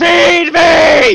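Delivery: shrill, very high, loud cat-like screeching yowl. Imitating a cat heard in the background: imitating Saul the cat screaming. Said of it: "Saul in the background just going like".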